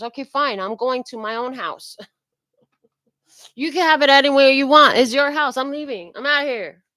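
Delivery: put-on huffy, put-out voice full of attitude. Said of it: "it has an attitude with it".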